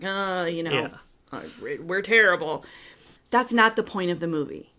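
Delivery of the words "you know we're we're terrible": heavily sarcastic, dripping with sarcasm. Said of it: "he says it very sarcastically".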